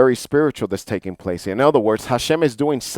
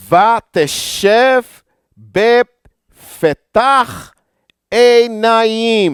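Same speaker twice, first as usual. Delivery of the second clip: very high, very slow, raised spelled-out Hebrew enunciation; 10 semitones higher, 7 dB louder than usual. Teaching the Hebrew wording of a verse, saying it very slowly. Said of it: "Said it very slowly for you".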